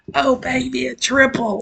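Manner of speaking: put-on squeaky high, drawn-out kid voice. Breaking down a fight clip, imitating the Call of Duty kid meme. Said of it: "that fucking Call of Duty twelve-year-old meme".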